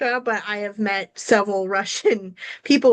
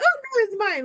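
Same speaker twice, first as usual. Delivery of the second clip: put-on very high, teasing, playful little-girl voice; 13 semitones higher than usual. Retelling a little girl keeping silverware from her dad: imitating a playful little girl. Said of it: "but she was in a playful manner".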